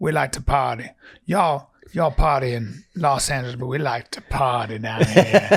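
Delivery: imitated New Orleans accent. Retelling what a guy said about partying: imitating a New Orleans accent. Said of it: "even the Nolans accent, when the guy said".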